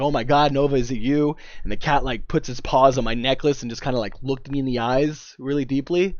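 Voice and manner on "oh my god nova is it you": put-on tearful crying, slower. Retelling meeting a cat believed to be Nova, the speaker reenacts crying. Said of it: "I'm holding it and I'm crying and I'm like".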